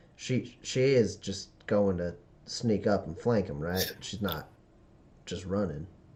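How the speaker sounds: muttered under breath. Turning back to the player after pointing at a companion: muttered under breath. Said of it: "like kind of under his breath".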